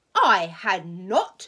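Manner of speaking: loud, sharp, very angry cry. Narrator reading a mouse character's retort, sharp and very angry. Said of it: "cried the Mouse sharply and very angrily".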